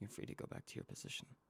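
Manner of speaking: hushed, very quiet, close, leaned-in whisper. Manji leans in to a person who just obeyed, very quietly. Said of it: "lean in very quietly and go".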